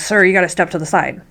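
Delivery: ordinary delivery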